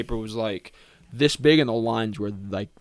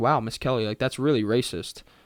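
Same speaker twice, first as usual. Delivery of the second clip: sarcastic, joking, tongue-in-cheek tone. Retelling a joke she made to her teacher, retelling it sarcastically.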